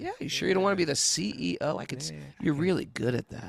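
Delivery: sweet-talking, coaxing, devilishly tempting tone. Acting out a tempting offer of a top job: playing the devil tempting someone. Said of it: "The devil comes in the form of me".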